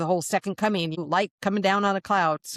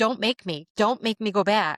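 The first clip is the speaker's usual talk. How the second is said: put-on sobbing plea, higher pitch; 4 semitones higher than usual. Retelling pleading in a dream not to be sent back: imitating own past sobbing. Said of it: "now I'm sobbing".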